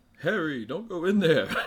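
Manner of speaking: very deep, hushed, barely audible voice. After saying rest in peace to him, give your best Alan Rickman impression. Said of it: "That's my best impression".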